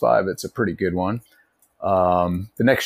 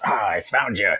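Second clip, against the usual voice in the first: put-on boozy, drunk orc warlord voice; 2 semitones higher than usual. Describing a game's voiceover, the speaker imitates a drunk orc. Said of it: "like a drunk orc".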